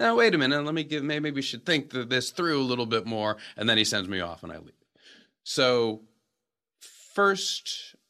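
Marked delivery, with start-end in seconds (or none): 0.0-3.4 ironic, sarcastic tone. Retelling an actor's line from a scene: imitating sarcastic delivery. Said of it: "he's being sarcastic".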